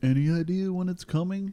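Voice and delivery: high, nagging character voice. Retelling how customers ask about new stock: imitating a customer asking. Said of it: "At least not in that voice".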